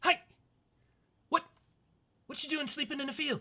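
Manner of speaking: put-on very high little elven boy voice. Voicing a small elven boy talking to a sleeping traveler: small elven boy voice. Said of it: "you see a small elven boy".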